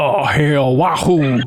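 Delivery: low, deep-voiced cheer. Showing how Arthur Morgan would sound doing a Mario line: Arthur Morgan doing a Mario line. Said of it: "I think it'd go a little something like this".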